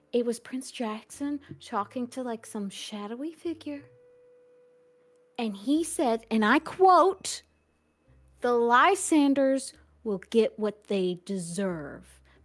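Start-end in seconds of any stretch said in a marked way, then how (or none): 8.4-12.0 low, menacing, acted threatening tone. Retelling a prince's words to a shadowy figure, quoting in a menacing tone. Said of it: "he said it in a menacing tone".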